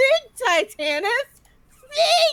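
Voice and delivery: very loud, blaring, shrill voice. Retelling how Titanus hears the Countess in his head: loud Countess voice. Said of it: "in the Countess's voice, like, loud as hell".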